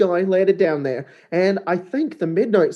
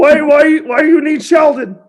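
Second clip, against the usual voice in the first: put-on ogre voice, higher and louder; 10 semitones higher, 10 dB louder than usual. Voicing a nine-foot ogre looking down at a tiny character: Sheldon the ogre voice. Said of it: "He goes".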